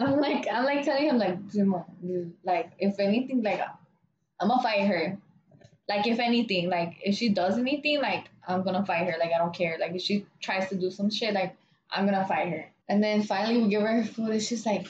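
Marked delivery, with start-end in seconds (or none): none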